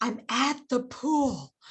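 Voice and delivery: hushed, slow, drawn-out, secretive half-whisper. Retelling what she said from the pool: imitating someone half-whispering. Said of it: "she's whispering and she goes".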